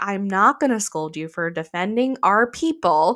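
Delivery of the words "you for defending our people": ordinary talk, nothing marked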